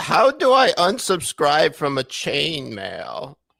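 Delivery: sing-song, swooping Yiddish grandmother lilt. Joking with another speaker, asking a question in a Yiddish grandmother voice. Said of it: "I'm sorry if I sound like a Yiddish grandmother".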